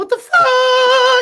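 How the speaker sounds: very high, loud head voice, "fuck" stretched out. Speaker tries the head voice another speaker suggested: high head voice. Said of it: "Go for the head voice".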